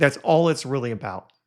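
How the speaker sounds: plain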